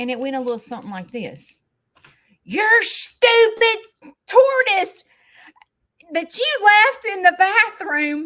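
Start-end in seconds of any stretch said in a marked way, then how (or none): 2.4-8.3 very high, furious, top-of-the-lungs mock shouting. Retelling what was said on a phone call: imitating Shane yelling angrily. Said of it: "he is yelling at the top of his lungs".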